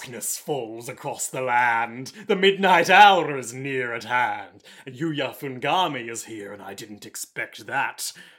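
low, ominous, put-on spooky voice. Voicing a villain's ominous monologue on request: put-on scarier voice. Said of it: "scarier voice".

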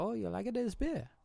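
put-on store clerk accent, pitched very high. Retelling what a liquor store clerk said: imitating a store clerk's accent. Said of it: "I don't know if that was the right accent".

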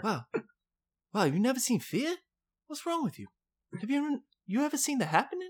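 very high-pitched movie-star voice. Imitating a film actor challenging someone about his movies: Mark Wahlberg impression. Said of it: "that's a good Mark Wahlberg".

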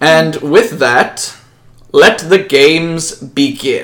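very slow, kingly, royal declaiming voice. The king finishes his address and opens the games, king addressing the crowd. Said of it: "King [name] stands up and addresses the crowd. / 950 years ago in the newly established Kingdom of [name], King [name] had just finished establishing alliances with three other major cities, Winterwat".

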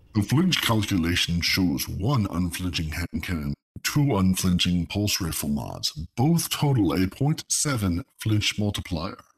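put-on deep robot leader voice. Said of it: "can we go the Optimus Prime route?".

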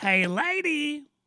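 comic, very high-pitched call, "lady" drawn out. Answering a request for a Jerry Lewis impression: Jerry Lewis voice. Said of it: "Jerry Lewis impression the entire time".

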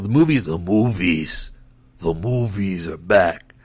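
voice dropped very low, sounding horrible. Announcing that movies are back, in a horrible Vin Diesel impersonation. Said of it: "my horrible Vin Diesel impersonation".

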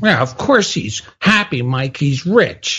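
mocking, sarcastic know-it-all tone. Retelling own reply to mike at a meeting: imitating own sarcastic reply. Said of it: "I sarcastically responded thirty years ago".

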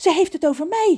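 startled, alarmed voice, very high pitched. Ron, hearing a stern woman's voice instead of music, calls out: startled call-out. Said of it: "roept Ron geschrokken".

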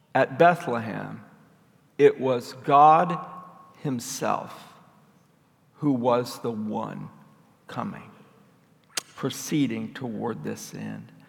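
unhurried delivery. Speaker restating the second point of the talk, said slowly. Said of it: "Let me say that slowly".

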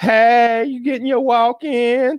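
high, loud lady voice. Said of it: "And she's like".

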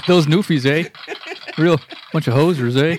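Canadian accent, hoser style. Joking about Newfies after a joke: Rick Moranis hoser voice. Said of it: "I'm in a little bit of a Rick Moranis mode".

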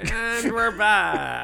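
slow, high-pitched radio announcer voice.

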